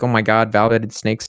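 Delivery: ordinary delivery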